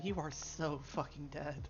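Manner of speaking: whispering. Voicing a character leaning in behind someone: whisper. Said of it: "leans in and whispers to him".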